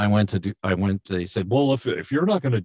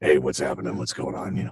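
put-on cartoon voice, much lower; 6 semitones lower than usual. Remembering being a kid who talked like this, Froggy voice. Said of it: "I was like the original Froggy".

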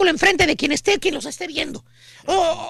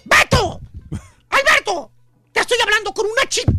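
put-on yelling woman's voice, higher pitch; 4 semitones higher than usual. Narrating a scene where the lady shouts for Beto, imitating the lady yelling. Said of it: "la señora ya le está gritando".

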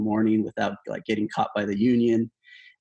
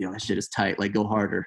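quiet, half-whispered voice; 3 dB quieter than usual. Retelling a call from a business owner: imitating someone half-whispering.

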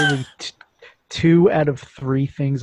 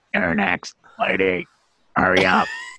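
high, rasping, mechanical electronic voice-box voice; 5 semitones higher than usual. Retelling a bank visit, the speaker is imitating an electronic voice box. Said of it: "he's just going like".

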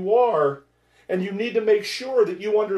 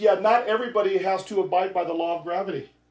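ordinary talk

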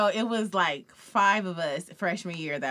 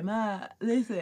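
thick speech as if around a swollen tongue; 2 semitones higher, 3 dB quieter than usual. Retelling a prank phone call to mom: imitating swollen-tongue speech. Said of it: "I'm trying to talk like my tongue is swollen".

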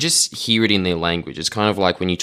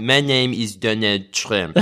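slow, clumsy attempt at American accent with French accent; 3 semitones higher than usual. Mocking how another country's video did it: French attempt at Donald Trump accent. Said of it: "That's the best France can do of Trump's accent".

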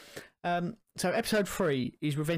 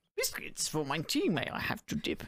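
croaky voice with big swooping pitch; 3 dB quieter than usual. Speaker shows how the small green character talks: high croaky Yoda voice. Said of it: "he's got that high voice, but it's a little bit croaky".

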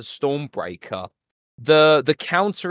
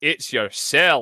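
put-on Scottish accent. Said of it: "[name] just doing a Scottish accent to [name]".

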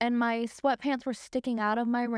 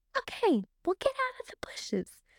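high, swooping shout; 9 semitones higher than usual. Retelling shouting back to mom over the leaf blower: imitating own past shouting. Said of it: "we're screaming over the leaf blower".

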